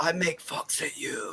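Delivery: put-on whisper. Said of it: "you just whisper".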